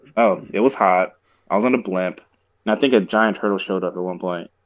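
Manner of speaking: usual speaking voice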